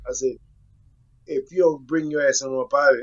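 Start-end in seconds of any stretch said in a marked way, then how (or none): none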